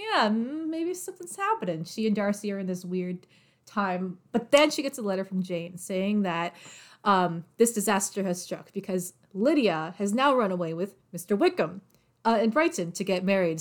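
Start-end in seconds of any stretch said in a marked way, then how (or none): 0.0-1.8 high, sing-song, knowing hopeful musing. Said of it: "so she's like".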